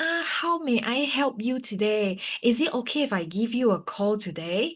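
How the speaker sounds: high-pitched servile customer-service voice. Explaining the servant approach to leads, high-pitched customer-service voice. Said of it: "It's like high pitched voice".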